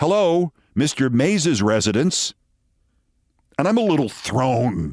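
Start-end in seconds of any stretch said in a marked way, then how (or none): 0.0-2.3 rough-edged yet feminine tone. Retelling a phone being answered in a gravelly feminine voice. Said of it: "a gravelly but feminine voice that sounded exactly like".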